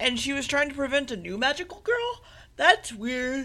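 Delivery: talking through a yawn. Telling a story about magical girls, yawning while talking. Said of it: "I'm sorry, I'm yawning".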